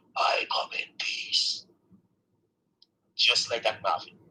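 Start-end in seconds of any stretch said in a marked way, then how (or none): 0.1-1.6 deep, slow, sinister, evil demonic voice. Retelling what a thing by the bed said to you: deep evil voice. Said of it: "it said in a deep, evil voice, it sounded like this".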